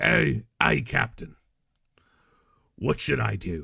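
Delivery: put-on real heavy, thick pirate Australian accent. Retelling a favourite character's line to listeners, in a pirate Australian accent. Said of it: "real, real, real, like, pirate Australian accent".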